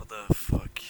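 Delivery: muttering. Voicing a captive waking up on a shoulder: mumbling. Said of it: "He's just kinda, like, mumbling".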